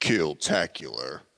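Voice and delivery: deep video game announcer voice. Calling out a game kill medal in Halo announcer voice. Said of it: "Turn on my Halo announcer voice".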